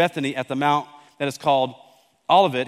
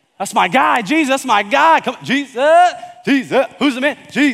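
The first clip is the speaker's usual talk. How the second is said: loud, high, hyped, excited cheering and hollering; 9 semitones higher, 7 dB louder than usual. Retelling the story of Jesus, voicing excited followers in the back, imitating excited shouting. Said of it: "They're in the back just shouting them down".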